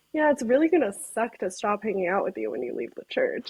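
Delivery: ordinary talk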